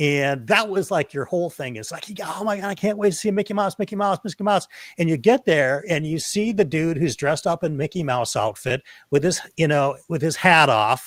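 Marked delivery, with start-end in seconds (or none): 2.2-4.7 put-on high, rushed, thrilled, excited-kid gush. Explaining an analogy to a listener, imitating an excited kid. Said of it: "you were a kid and you were really excited".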